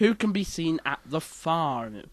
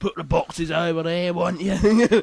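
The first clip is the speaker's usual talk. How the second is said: full-on, loud, put-on Cockney accent; 3 semitones higher, 7 dB louder than usual. Retelling how a man at work talked, imitating a Cockney accent. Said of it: "He had a completely Cockney voice".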